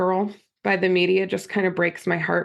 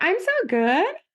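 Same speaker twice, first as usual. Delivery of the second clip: question-like lilt rising on good; 10 semitones higher than usual. Describing people putting on a front, demonstrating speaking in question marks. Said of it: "Like that".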